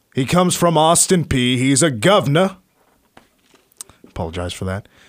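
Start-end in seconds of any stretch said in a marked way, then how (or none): 0.2-2.6 put-on English accent, higher. Reading out a recruiting announcement, in a put-on English accent. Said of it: "now I'm trying to put out English accents".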